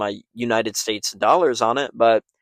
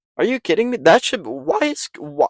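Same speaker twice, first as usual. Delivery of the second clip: voice cracking mid-sentence, pitched up; 9 semitones higher than usual. Speaker reacts to a fight card lineup, voice cracking. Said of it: "my voice is cracking".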